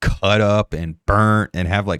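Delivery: plain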